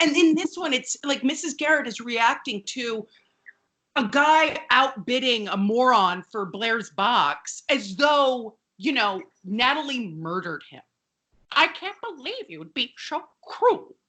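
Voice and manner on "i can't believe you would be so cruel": pitched-up, heavily disapproving, reproachful voice. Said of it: "voice of disapproval".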